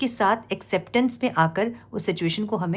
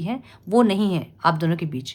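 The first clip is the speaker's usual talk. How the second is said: ordinary talk, nothing marked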